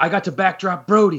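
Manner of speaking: eager, gushing tone. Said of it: "he gets all excited".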